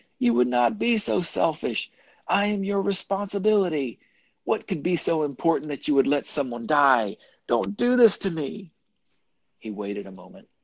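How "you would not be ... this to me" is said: very high, pleading shriek. Reading a story, the other character held by the rope answers, shrieking. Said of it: "the other shrieked".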